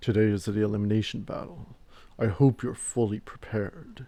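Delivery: forced, throat-straining, really deep put-on bass. Reading a game character's announcement, the speaker attempts a really deep voice. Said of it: "It's hard for me to do a really deep voice".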